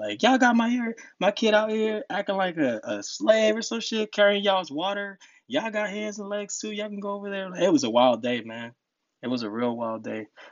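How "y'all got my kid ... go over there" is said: very high-pitched, scolding yell. Retelling how the speaker's mom yelled at everybody at grandma's house, imitating mom yelling. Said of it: "she was just yelling at everybody".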